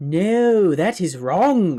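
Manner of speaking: loud, high-pitched, slow, chastising scold. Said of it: "this woman says in a really, really chastising voice".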